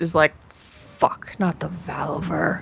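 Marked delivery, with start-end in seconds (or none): 1.0-2.6 muttered quietly under her breath. Voicing a character who spots guards ahead: muttering under her breath. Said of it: "under her breath".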